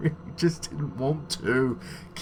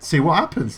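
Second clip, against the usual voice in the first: plain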